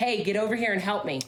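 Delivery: mock light cry, called out like a scream. Retelling a voice heard screaming for help: imitating a scream. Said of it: "my voice, scream, yell".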